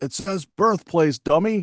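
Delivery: put-on drill sergeant holler, toned down and high. Retelling a drill sergeant passing while filling out a form, imitating a thunderous shout. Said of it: "I would hear a very thunderous".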